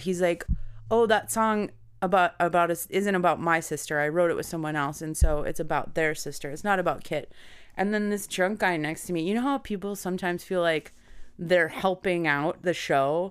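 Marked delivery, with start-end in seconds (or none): none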